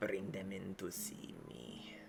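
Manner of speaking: low, raspy, soft-spoken voice. A storyteller voices a hidden figure heard after a little thump: low raspy voice. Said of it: "a very like kind of low raspy voice".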